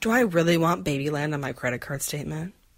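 ordinary delivery

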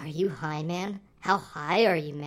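put-on whisper. Retelling what voices next to you said as a show ended: imitating someone whispering. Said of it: "Just whispering to me".

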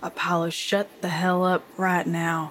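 low hushed whisper. Retelling what they said to their companion Apollo, in a low whisper. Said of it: "I say that at like a low whisper".

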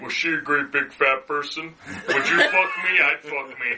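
creepy serial-killer voice. Talking with others about a scene, doing the character's voice: deep Buffalo Bill voice. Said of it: "it's that deep".

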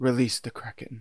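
calm, quiet, soft delivery. Imitating an actor playing Zeus saying a line: calm Laurence Olivier Zeus line. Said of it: "he says it so calmly".

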